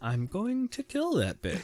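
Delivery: hushed, utterly composed, very calm and quiet. Retelling a character's threat: imitating very calm speech. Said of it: "Very calmly saying".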